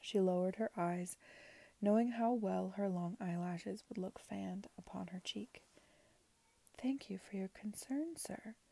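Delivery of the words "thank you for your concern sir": soft, slight lisp, much quieter, higher. A woman replies to a man she calls sir, soft, with a slight lisp. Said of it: "she said softly".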